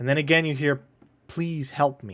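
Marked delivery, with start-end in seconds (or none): 1.3-2.1 faint, barely-there, very hushed pleading. Narrator tells the players an unseen someone asks again: very hushed voice. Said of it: "Very quietly".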